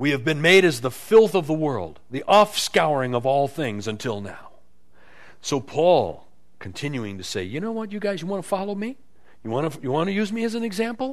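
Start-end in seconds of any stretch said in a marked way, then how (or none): 7.4-11.1 put-on mild sarcasm, higher pitch. Quoting a man's words to people who want to follow him, retelling with a little sarcasm. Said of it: "Kind of uses a little sarcasm in his voice".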